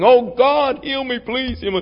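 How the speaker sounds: high, tearful, begging voice. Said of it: "insisting with tears, begging".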